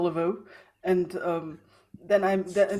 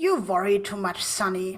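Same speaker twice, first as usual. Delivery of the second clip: put-on elderly woman's voice. Answering someone fretting about screwing everything up, in an old lady voice. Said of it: "I say in the old lady's voice".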